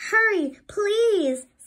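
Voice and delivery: very high, loud, urgent pleading cry. Reading a story, trapped Sandy calls to Flounder as he comes to free her, crying out. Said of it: "Sandy cried".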